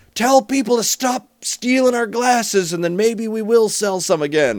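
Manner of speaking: high, loud shout, as if carrying across a room. Retelling how the bartender answered a question about pint glasses: imitating bartender shouting. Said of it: "shouts out".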